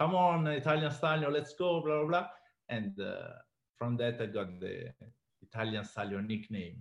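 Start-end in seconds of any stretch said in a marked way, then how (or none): 0.0-2.3 play-acted, screaming, hollering yell. Retelling a shout from the ring: imitating Floyd screaming. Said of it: "was screaming".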